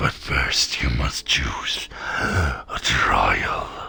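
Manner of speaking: hoarse, rasping, raspy beast voice. Narrator voicing a strange beast announcing the trials; raspy creature voice. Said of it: "In a raspy voice".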